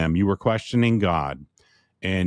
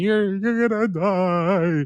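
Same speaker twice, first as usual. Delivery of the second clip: mock crying through sobs, very high and slow; 10 semitones higher than usual. Retelling a wife's reaction to bad news: imitating someone sobbing. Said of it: "like, sobbing".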